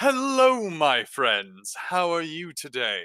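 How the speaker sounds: big, friendly, open, loud, boisterous, swooping voice. Speaker voicing one of their characters, in Dovrin's loud, boisterous voice. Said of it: "speaking in a loud, boisterous voice, but it's friendly".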